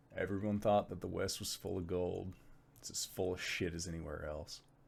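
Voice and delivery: very quiet, low, hushed mutter under the breath. A character speaks so only those beside him hear, muttered under his breath. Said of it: "just sort of under his breath".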